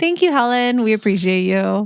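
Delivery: insincere, sarcastic tone. Speaker re-says a thank-you after being told it sounded odd, sarcastic thanks. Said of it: "now that sounded more sarcastic to me".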